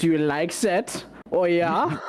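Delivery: joking, high, put-on German accent. Voicing a joke for an attack in a put-on German accent. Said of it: "joke in the German accent".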